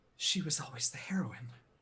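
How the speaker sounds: muttered under the breath. The narrator voices Harriet as Jane sniffs her; Harriet muttering under her breath. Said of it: "Harriet sort of quietly says".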